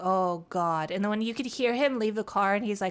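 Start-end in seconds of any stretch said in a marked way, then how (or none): 0.0-0.9 put-on stunned, dazed voice, lower pitched. Retelling a cop on the radio after a crash: imitating a stunned cop. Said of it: "he just sounded like he was just, like, stun locked".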